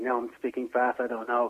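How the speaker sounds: plain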